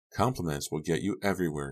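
ordinary delivery

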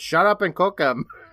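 rude, shrill, loud yell. Retelling a story, the speaker voices a crowd member cutting someone off: retelling a crowd member's yell. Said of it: "a crowd member who's yelling".

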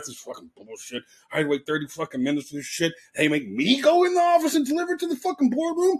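muttered cursing under the breath, swooping pitch. Retelling walking downstairs after carrying the food upstairs, cussing under his breath. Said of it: "I'm cussing under my breath".

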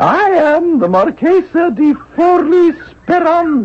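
artificial, forced, very high falsetto woman's voice. Asked to disguise the voice and sound like a woman when introducing oneself, forced woman's voice. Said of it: "Can you sound like a woman?".

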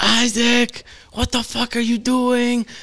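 very high-pitched, shrill scream. Retelling a mom catching them smoking: imitating a mom screaming. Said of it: "you hear his mom scream".

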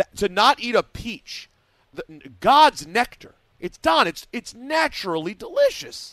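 worked-up, impassioned rant, high, loud and slow.

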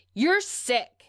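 high, loud screaming.

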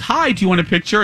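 normal talking voice

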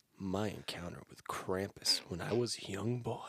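very slow, close-to-the-mic hushed whisper. Showing how a friend began reading his story: imitating Adrian's whisper. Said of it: "this is how he started".

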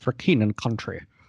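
bad put-on Scottish accent. Imitating a video game spy unit's bad impression: bad Sean Connery imitation. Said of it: "I will imitate a bad Sean Connery imitation".

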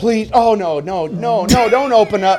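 acted pleading tone. Retelling how they begged him not to do it: retelling begging. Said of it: "We begged him".

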